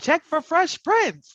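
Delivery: very high, loud, theatrical stagey voice. Delivering the punchline of a dad joke, in a stagey voice. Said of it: "I have to do it in like a stagey kind of voice".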